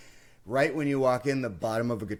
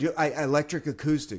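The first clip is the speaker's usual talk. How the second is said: mock agitated, frantic, freaked-out, trailing off; 4 semitones higher than usual. Retelling walking into a cramped guitar shop: imitating own frantic, agitated request. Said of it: "I'm freaking out".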